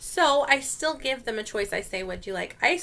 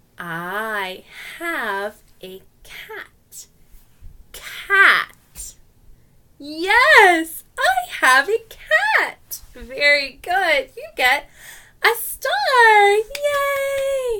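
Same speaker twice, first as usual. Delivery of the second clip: very slow, dragged-out, very high, very loud delivery; 9 semitones higher, 9 dB louder than usual. Teacher demonstrating how to speak to level-one english learners: very slow. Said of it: "Level one, very slow".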